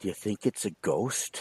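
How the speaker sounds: very faint, hushed, barely-there little voice. Retelling asking a brother in a creepy basement: imitating a very faint voice. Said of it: "I remember saying very faintly".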